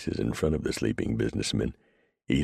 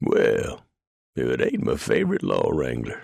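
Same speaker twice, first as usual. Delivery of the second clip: raspy, gravelly, rough-edged voice; 4 dB louder than usual. Reading a story aloud, an old livery owner greeting a lawman: gravelly voice. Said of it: "he said in a gravelly voice".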